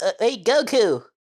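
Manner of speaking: put-on high, loud childlike voice calling out. Imitating how Krillin sounds as a kid: kid Krillin voice. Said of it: "when Krillin's a kid, it's like".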